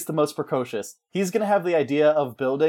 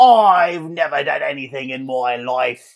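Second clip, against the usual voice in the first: odd put-on voice, loud, slow and drawn out; 5 dB louder than usual. Narrating a game, the speaker voices D-Rat when others blame him, in D-Rat character voice. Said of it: "I don't know why I sound like this".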